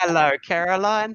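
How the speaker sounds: put-on loud, high, drunk British accent.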